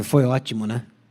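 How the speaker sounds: lukewarm, unconvinced, flat, unenthusiastic delivery. Showing nonverbal communication, positive words with a contradicting tone: unenthusiastic tone. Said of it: "você ouviu o meu tom de voz, você sabe, olha, essa semana foi tudo, menos boa".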